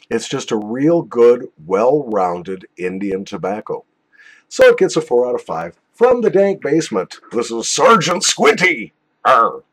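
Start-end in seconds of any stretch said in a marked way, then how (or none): 7.3-9.5 put-on pirate voice, growling, ending on arr. Introducing the next tobacco for a joke: put-on pirate voice. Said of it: "That was more like pirate than sergeant".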